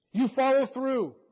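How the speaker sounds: very loud, high-pitched, commanding shout. A centurion calls out to an executioner who couldn't swing: shouted. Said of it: "shouted the centurion".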